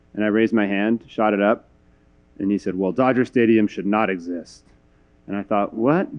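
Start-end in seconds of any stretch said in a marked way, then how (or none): 3.0-4.7 rough gravelly voice. Recalling a speaker who asked the audience about dodger fans, in a gravelly voice. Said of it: "in this gravelly voice".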